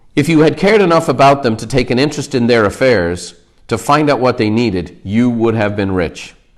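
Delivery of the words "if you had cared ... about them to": ordinary delivery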